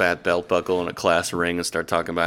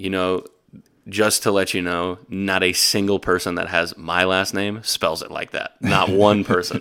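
ordinary talk, nothing marked

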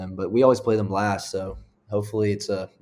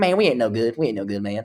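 louder, put-on Southern coach voice; 3 semitones higher, 4 dB louder than usual. Retelling what an opposing coach always said: Casey Dunn impression. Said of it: "my Casey Dunn impression".

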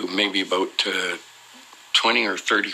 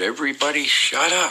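high-pitched shouting. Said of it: "he just shouted".

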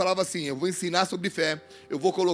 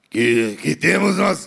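put-on drunk-sounding demon voice, lower, louder, much slower; 4 semitones lower, 7 dB louder than usual. Reading about two possessed men, the speaker voices them in a drunk-sounding demon voice. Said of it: "Esse aqui é bêbado, né?".

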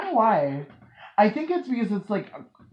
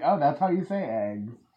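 ordinary talk, nothing marked

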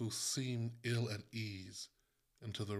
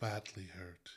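low, quiet, soft voice; 6 dB quieter than usual. The visitor answers the mother's question, quietly. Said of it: "he said, quietly".

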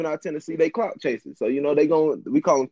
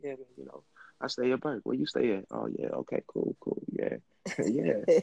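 smooth, soft flirting voice; 2 semitones lower, 8 dB quieter than usual. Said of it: "I'm putting on that smooth voice".

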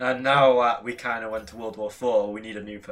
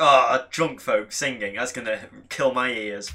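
ordinary delivery

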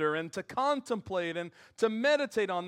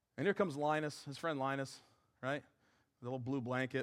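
ordinary talk, nothing marked

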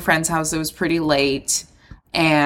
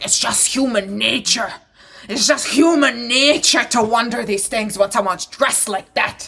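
put-on tipsy, drunk old man voice, pitched up; 6 semitones higher than usual. Retelling an argument in public, the speaker mimics a drunk old man. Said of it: "this drunk old man is like".

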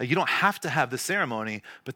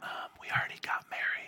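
soft, hushed whisper. Retelling what a couple said at a meeting: imitating a whisper. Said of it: "It's like whispering".

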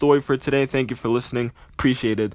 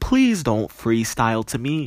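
plain

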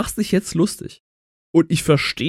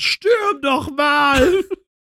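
very high, excited, triumphant winning cheer; 10 semitones higher than usual. Picturing Knossi after winning something, Knossi winning voice. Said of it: "einfach so in dieser Stimme, wenn er was gewonnen hat".

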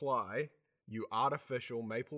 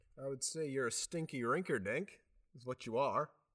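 odd, hard-to-place put-on Canadian accent. Answering a hockey trash-talk question, in an unidentifiable put-on accent. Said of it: "I don't know what that accent was, but I'd put on a fake Canadian accent".

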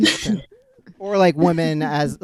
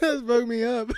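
laughing to tears, higher pitched; 8 semitones higher, 3 dB quieter than usual. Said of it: "I'm actually crying right now".

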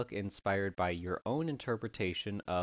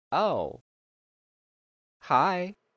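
put-on creepy doll voice, higher and louder; 10 semitones higher, 10 dB louder than usual. Imagining being approached in a haunted house: put-on creepy doll voice. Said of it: "I would just be a very creepy doll".

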